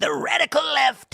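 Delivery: cartoonish, hammed-up, high, creaky put-on voice. Showing how the Trump voice is done: cartoonish Trump voice. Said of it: "when I do the Trump voice, I always just go cartoonish".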